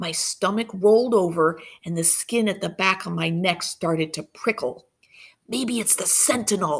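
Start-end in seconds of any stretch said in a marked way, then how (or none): 5.5-6.8 hissing voice, scared tone. Narrator reading a boy's line to the others about a noise they heard: hissed. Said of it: "I hissed".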